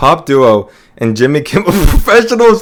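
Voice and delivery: giggling, laughing through the words. Trying to read out an album ranking line, laughing while talking. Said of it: "I can't say this without laughing".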